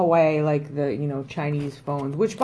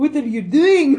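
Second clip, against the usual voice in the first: very high-pitched, put-on Scottish accent; 10 semitones higher, 4 dB louder than usual. Repeating a mother's line from the story, in a scottish accent. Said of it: "friggin' groundskeeper Willie all of a sudden".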